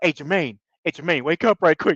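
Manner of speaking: spooked, nervous, frightened calling out. Retelling a night at camp, quoting Patrick waking Jermaine: imitating Patrick sounding scared. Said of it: "and he's all scared".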